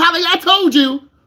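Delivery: put-on shrill, very high, loud scolding parent voice. Acting out a parent scolding a nervous student driver: imitating a parent scolding. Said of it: "your mom and dad cuss you out".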